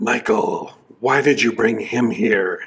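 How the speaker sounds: deep, raspy, sinister evil spirit voice. Narrator voicing the evil spirit speaking through the penitent, deep, raspy evil voice. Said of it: "Sorry for that attempted dramatization".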